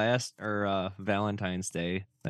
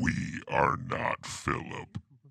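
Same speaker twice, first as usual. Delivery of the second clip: eerie demonic voice, lower and quieter; 4 semitones lower, 4 dB quieter than usual. Joining a story reading, voicing the line We are not Philip: creepy voice as Philip. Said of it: "Do that again".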